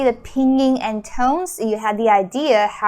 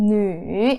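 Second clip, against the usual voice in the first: nu falling low then lifting, dipping third tone. Explaining pinyin with two dots, third tone on nu. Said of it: "It's the third tone".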